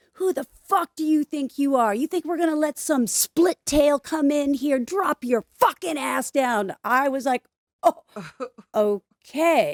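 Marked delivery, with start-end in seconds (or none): 0.2-6.7 high, screaming, acted drill-sergeant tirade. Retelling how he screamed at the speaker over push-ups: imitating someone screaming. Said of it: "he was screaming at me".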